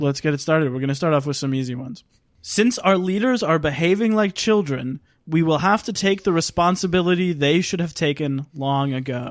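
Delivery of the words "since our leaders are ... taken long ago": normal talking voice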